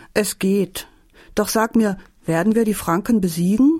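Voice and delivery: plain reading voice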